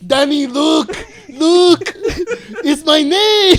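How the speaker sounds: high, booming voice, drawn out slowly. Imitating a star telling Danny about his name: imitating Arnold Schwarzenegger. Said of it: "Why did that sound more Mexican than".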